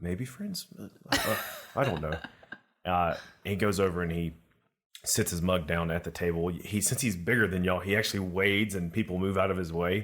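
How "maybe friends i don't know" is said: muttered quietly under breath. A game master voices a character muttering under his breath. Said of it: "under his breath".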